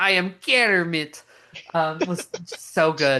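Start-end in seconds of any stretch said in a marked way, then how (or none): 0.0-1.2 put-on Russian accent. Describing a favourite Muppets movie, quoting Kermit in a fake Russian accent. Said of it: "with his like fake Russian accent".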